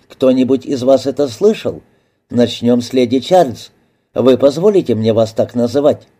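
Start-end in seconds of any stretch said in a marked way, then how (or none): none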